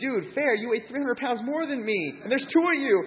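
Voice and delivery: acted-out crying. Retelling begging two guys who wanted to fight, re-enacting own crying. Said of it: "So I'm just crying".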